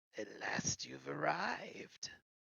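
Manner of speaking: breathy crone voice crackling like dry weeds. As the crone speaks over her crystal ball, her voice crackles. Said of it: "her voice crackles like dry weeds".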